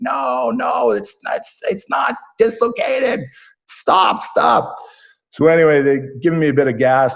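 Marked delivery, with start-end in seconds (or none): 0.0-4.8 mock creaky, rough, very high cry of pain. Retelling a doctor forcing his arm, retelling screaming in pain. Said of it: "And I'm screaming like".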